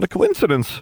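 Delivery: very high, squeaky voice. The narrator answers a man's remark about the wand and the scar: squeaked. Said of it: "I squeaked".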